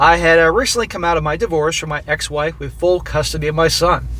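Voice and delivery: plain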